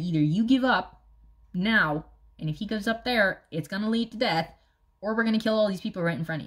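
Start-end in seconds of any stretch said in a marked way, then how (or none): none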